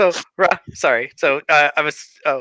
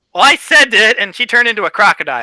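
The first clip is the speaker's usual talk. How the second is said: ordinary talk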